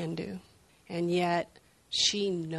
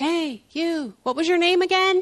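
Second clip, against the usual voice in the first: small, shrill, very high, loud little voice; 12 semitones higher, 10 dB louder than usual. Retelling a woman in a wheelchair calling down a shop aisle, in a little voice. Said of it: "I hear this little voice go".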